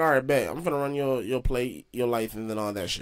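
ordinary talk

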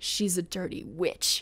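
quiet, soft, hushed whisper. Retelling a show scene where a lady at the inn speaks: imitating a whisper. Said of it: "the lady even whispers".

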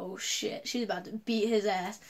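ordinary delivery

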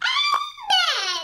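loud shouted word. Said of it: "I shout amen".

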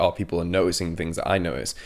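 normal talking voice

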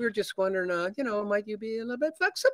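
timid, nervous, very high rising voice, up an octave. Realtor recounts clients asking about his commission, imitating voice jumping up an octave. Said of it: "even their voice goes up an octave".

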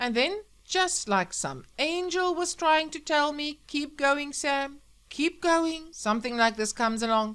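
loud, high, bellowing radio announcer voice. Sam speaks to his listeners over the radio, bellowing. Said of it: "bellowed the radio".

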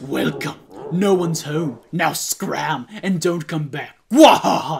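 awful, terrible big-bad monster cartoon villain voice. Playing through a Mario game, doing a horrible Bowser voice. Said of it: "That's a horrible Bowser voice".

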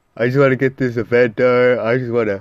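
talking while yawning. Speaker wanting to get an event done, talking while yawning. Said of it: "I'm talking while I'm yawning".

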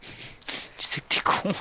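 slow, teasing whispered voice.

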